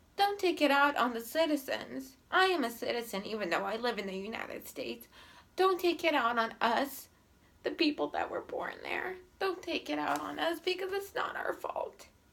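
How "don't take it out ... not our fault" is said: high, tearful speech through crying. Pleading for people born in Russia not to be blamed, crying while speaking. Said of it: "I'm sorry I'm crying".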